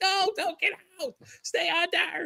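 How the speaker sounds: very high, drawn-out, pleading scream. Retelling a frightened inner reaction to a guest's story: imitating someone screaming. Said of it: "I'm like that person screaming at the screen".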